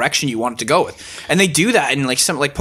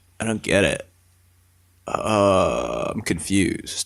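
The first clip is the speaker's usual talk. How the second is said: put-on monotone voice, lower and quieter; 8 semitones lower, 5 dB quieter than usual. Retelling a chat about games, imitating a friend: monotone Darren impression. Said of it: "'cause he's very monotone".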